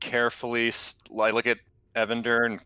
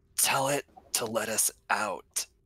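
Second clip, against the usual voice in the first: hushed, close half-whisper; 4 dB quieter than usual. Leaning your head toward Evander to speak to him; half-whispered. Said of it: "lean my head towards Evander and whisper".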